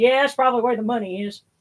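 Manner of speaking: offhand rural Southern voice. Retelling a doctor's phone call about test results, in Doctor Haynes's redneck voice. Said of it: "he had kind of a redneck voice".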